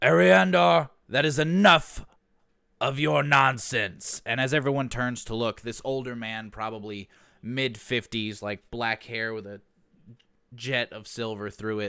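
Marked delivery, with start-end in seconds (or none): 0.0-4.2 booming, very loud, high bellow at full volume. As game master, voicing a man in a town square shouting at Ariandar, bellowing. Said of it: "he kind of bellows out".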